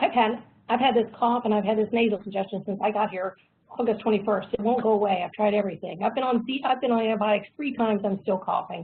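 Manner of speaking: normal talking voice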